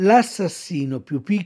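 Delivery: plain reading voice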